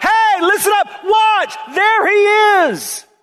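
put-on very high, drawn-out, emphatic shout. Retelling how John the Baptist pointed people to Jesus: imitating a shout. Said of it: "It's like he was shouting".

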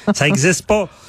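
mocking irony. Answering another speaker in a conversation about false accusations: sarcastic. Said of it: "Tu sens mon sarcasme un petit peu".

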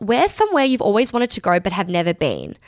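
ordinary talk

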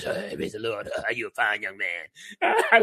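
very low, raspy, drawn-out, sing-song preacher voice. Retelling what a pastor says, imitating Pastor Carlin's raspy voice. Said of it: "he has a raspy voice".

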